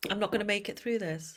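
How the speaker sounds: ordinary delivery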